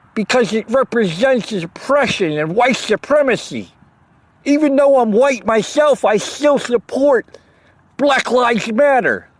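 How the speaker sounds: put-on mocking activist voice. Mocking how some young activists talk: mocking impression of millennial activists. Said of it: "I'm sorry I'm talking like that".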